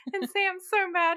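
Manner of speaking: high, loud, gleeful, worked-up excited burst.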